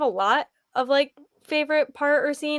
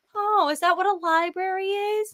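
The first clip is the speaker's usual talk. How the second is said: put-on high, mocking, condescending know-it-all sarcasm; 7 semitones higher than usual. Retelling a reaction to a book character's reply: mocking mansplaining tone. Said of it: "mansplain every little thing to me and be like".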